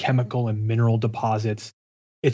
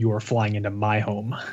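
put-on snarky tone. Reading a queen's reply aloud, imitating the Queen throwing snark. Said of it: "the Queen throwing some snark at him".

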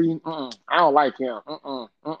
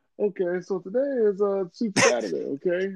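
put-on smooth-talking voice, higher; 6 semitones higher than usual. Retelling how a commentator talks: imitating a smooth talker. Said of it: "he talks so smooth though".

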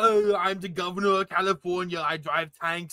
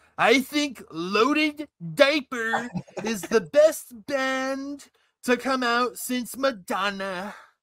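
band stressed and stretched; 3 semitones higher than usual. Answering a question addressed to Donald Trump: Donald Trump impression. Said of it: "it's a good impression".

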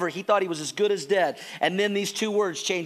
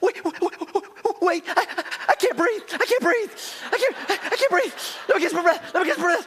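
put-on very high, breathless, gasping childlike panic; 11 semitones higher than usual. Retelling how Caleb begged before a spanking: imitating a panicked child gasping for breath.

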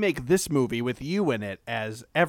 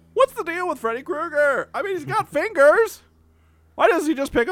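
high, loud, punchy stand-up comic delivery; 14 semitones higher, 5 dB louder than usual. Retelling going to see Seinfeld, acting out his bit: Seinfeld stand-up impression. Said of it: "we're going to go see the Seinfeld".

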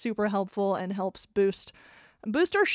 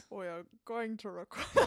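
put-on deeper, lowered voice; 8 dB quieter than usual. Hosts trying out an intro line, one speaking in a deeper voice. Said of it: "You're essentially just making it deeper".

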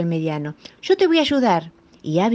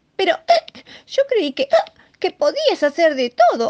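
higher-pitched little cub voice, protesting; 12 semitones higher, 3 dB louder than usual. Narrator reads the little lion cub's reply to his father, protesting. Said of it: "protestó el pequeño leoncito".

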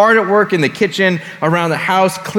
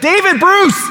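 very high, shrill calling yell; 12 semitones higher than usual. Retelling how Mom called from downstairs: imitating mom yelling. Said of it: "When my mom would yell".

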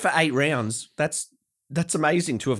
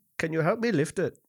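put-on Indian accent; 4 semitones higher than usual. Retelling what a guy who showed up hours late asked, imitating an Indian accent. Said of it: "Good accent".

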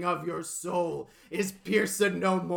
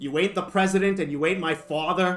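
put-on New England accent; 4 dB louder than usual. Speaker quoting a man who has a New England accent, New England accent. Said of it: "He's got like this great New England accent going on".

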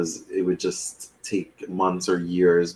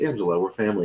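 put-on sarcastic delivery. Recapping a scene where a man says this to a woman, retelling a sarcastic line. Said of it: "that's when he kind of is like sarcastic".

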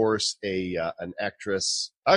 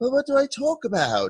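high-pitched put-on voice. Retelling an invitation to a guest who asked what to discuss: imitating Naomi. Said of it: "Was that my voice, [name]?".

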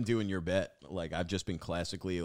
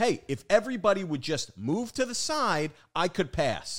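very high, loud shout, acted out; 12 semitones higher, 5 dB louder than usual. Telling about a man with samurai swords pushing through a crowd, retelling someone yelling. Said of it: "And he starts yelling".

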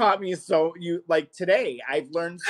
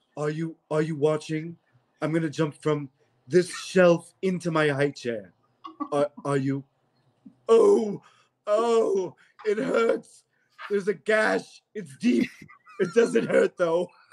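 put-on drunk character voice. Imitating a cartoon baby character drunk and boasting: drunk Stewie voice. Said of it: "when Stewie is drunk and he's like".

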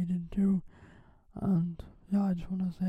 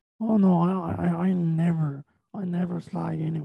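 usual speaking voice

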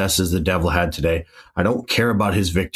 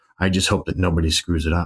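ordinary talk

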